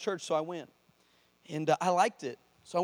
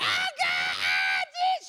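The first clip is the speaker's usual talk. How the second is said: very high, swooping, drawn-out wailing screams, acted out; 3 dB louder than usual. Retelling a churchgoer who fell in the sanctuary: imitating a woman screaming. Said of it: "She's screaming just like that".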